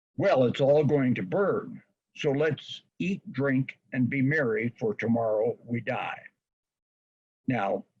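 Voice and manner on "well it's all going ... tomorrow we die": plain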